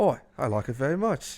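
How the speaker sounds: put-on somewhat Australian-sounding accent. Acting out a son answering his dad, in an Australian-sounding accent. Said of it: "Australian now?".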